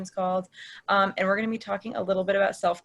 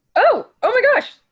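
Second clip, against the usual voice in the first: very high, very loud startled caught-off-guard cry; 11 dB louder than usual. Just handed the controls by Sarah, reacting startled. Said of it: "I didn't mean to sound so startled".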